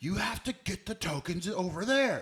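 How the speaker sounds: mock yelling, very high, loud and shrill. Retelling how the bartender answered him: imitating someone yelling. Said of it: "yells at him".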